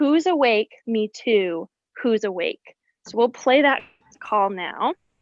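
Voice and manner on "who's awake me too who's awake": ordinary talk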